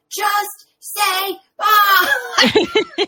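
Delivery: loud, high yelling. Retelling own reaction while reading a book, imitating own yelling. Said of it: "yelling as I'm reading this".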